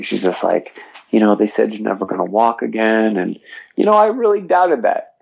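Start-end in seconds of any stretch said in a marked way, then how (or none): none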